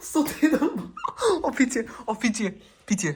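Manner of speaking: high, loud, laughing mock begging.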